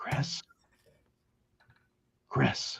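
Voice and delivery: hushed whisper calling out. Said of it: "And I whisper and I go".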